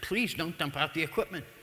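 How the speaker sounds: plain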